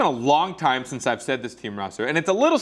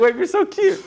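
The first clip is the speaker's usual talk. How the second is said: high, loud, cutesy voice. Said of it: "I was like".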